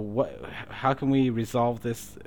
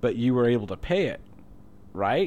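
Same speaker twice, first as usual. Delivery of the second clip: play-acted poker-faced, bone-dry deadpan delivery. Retelling what a friend playing devil's advocate said, retelling a friend's deadpan.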